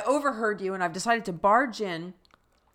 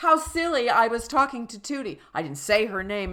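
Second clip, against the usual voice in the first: ordinary delivery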